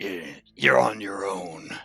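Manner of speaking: voiced as a fantasy orc, in character. Game master speaking as an orc backing away from the players, orc voice. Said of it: "the orc says to you".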